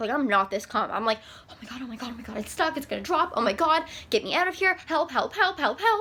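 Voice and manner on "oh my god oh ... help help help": full-on panicked pleading, rising in pitch. Retelling being stuck and calling for help: acting out panicked pleading. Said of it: "I'm like full on panic attack".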